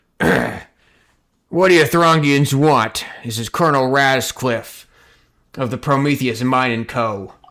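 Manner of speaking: rough, smoky, gruff voice, slow and loud. Voicing a colonel speaking through a camera device: smoky, gruff voice. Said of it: "a different voice kind of approach. This one, smoky and, um, uh, gruff".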